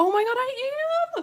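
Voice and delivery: squeaky voice shooting very high. Looking through an old sketchbook, the speaker reacts, voice going really high. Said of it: "my voice just went really high right there".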